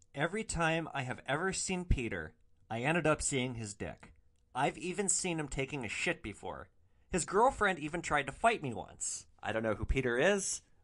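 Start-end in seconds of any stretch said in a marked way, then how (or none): none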